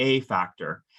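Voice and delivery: the word "a" punched hard with strong stress. Explaining the protected ground as a factor, strong emphasis on a. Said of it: "you heard me emphasize the word a before factor".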